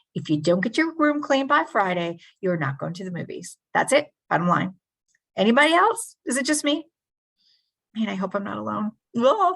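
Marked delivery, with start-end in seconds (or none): 0.1-4.7 put-on threatening voice. Retelling threatening to take away the movies: imitating a threatening parent. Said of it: "threatening to take something away".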